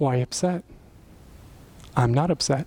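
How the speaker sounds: cool, calm, even, untroubled tone. Retelling a man up in his face answering his begging: imitating a calm reply. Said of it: "he said it that calm".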